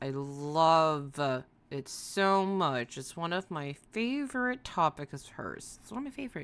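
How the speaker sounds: ironic fake enthusiasm, dry and sarcastic. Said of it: "hear the sarcasm in my voice".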